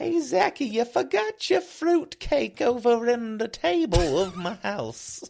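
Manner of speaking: put-on loud, very high old-lady voice. Pretending to be the listener's mom, talking to him in an old-mom voice. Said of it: "Why are you talking like my mom's old?".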